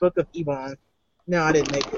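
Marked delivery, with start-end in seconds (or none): 0.0-0.8 quiet, low mutter under the breath. Asked what the book's title says, answering with it muttered. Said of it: "I'll mutter it".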